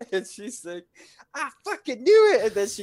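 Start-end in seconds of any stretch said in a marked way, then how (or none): 1.3-2.5 woman's piercing, shrill, full-volume scream. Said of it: "you hear this woman yelling".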